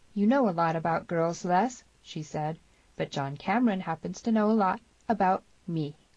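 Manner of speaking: plain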